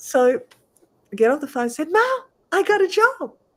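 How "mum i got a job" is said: acted, very high, drawn-out, thrilled excitement. Retelling announcing a new job to Mum, acting out past excitement. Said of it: "Like I was so excited".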